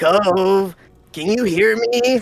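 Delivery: loud, very slow, spaced-out stoner surfer drawl. Reading a character's line aloud in a story: stoner surfer voice. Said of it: "surfer sounds more like".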